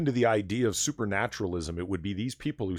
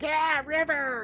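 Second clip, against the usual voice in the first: put-on very high, shrill teenage girl shriek. Describing girls around a teen heartthrob, screaming teenage girl impression. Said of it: "that was my impression of a teenage girl screaming".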